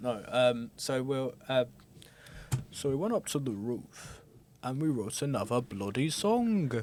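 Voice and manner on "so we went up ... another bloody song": put-on northern English accent. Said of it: "Why am I making [name] more northern?".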